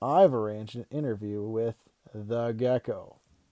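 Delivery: ordinary delivery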